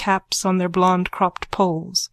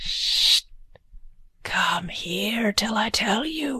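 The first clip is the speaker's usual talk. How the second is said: slow, hoarse, husky whisper; 2 semitones higher, 5 dB quieter than usual. Reading a bawd calling from a doorway: husky whisper. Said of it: "her voice whispering huskily".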